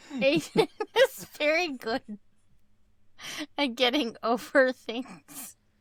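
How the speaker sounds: talking through laughter. Commenting on a story about another person, laughing while talking. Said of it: "Sorry, I'm laughing".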